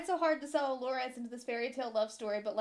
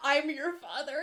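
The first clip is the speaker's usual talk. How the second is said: ordinary delivery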